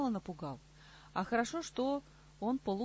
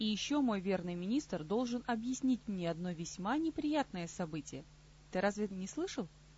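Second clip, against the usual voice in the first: plain reading voice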